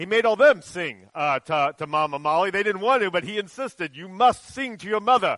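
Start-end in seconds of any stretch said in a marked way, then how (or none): 4.0-5.4 put-on Kenyan accent, pitched much higher. Quoting what he told your children during the trip, in a Kenyan accent. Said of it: "that's my Kenyan accent".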